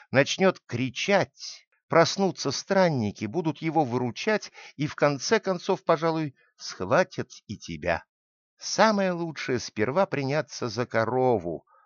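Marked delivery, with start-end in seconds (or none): none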